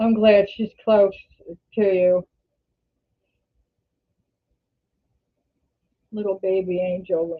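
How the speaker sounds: teary voice, on the edge of crying. Speaking to viewers in a vlog; teary. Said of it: "I don't know why I'm teary today".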